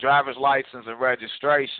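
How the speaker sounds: ordinary talk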